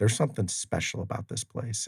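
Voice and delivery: ordinary delivery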